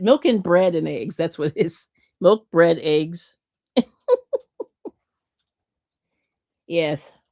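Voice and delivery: words broken up by laughing. Reading out a shopping list from the chat, laughing while talking. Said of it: "I have to laugh".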